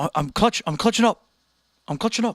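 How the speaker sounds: put-on Australian accent. Retelling what a guy said after his friends said he'd lose, Australian accent. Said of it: "he said it with like an Australian accent".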